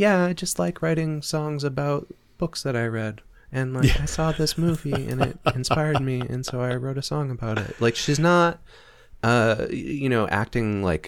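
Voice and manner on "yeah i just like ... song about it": put-on soft-spoken quiet voice, higher. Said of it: "She's a pretty, like, soft-spoken, quiet".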